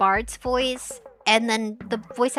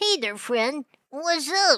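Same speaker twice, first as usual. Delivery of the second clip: nasal, youthful cartoon voice, higher pitch; 3 semitones higher than usual. Reading a game character's lines aloud in a Gumby voice: nasally Gumby voice. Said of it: "Gumby had more of a nasally voice".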